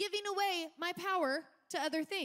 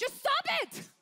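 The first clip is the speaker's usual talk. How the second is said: acted-out shrill outright yell; 8 semitones higher, 4 dB louder than usual. Describing a clip where a man yells at a woman, retelling a yell. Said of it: "he literally yells at him".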